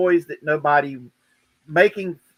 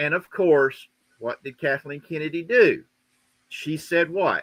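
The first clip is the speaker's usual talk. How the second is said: ordinary delivery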